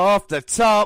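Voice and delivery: high, loud, excited, hyped play-by-play call.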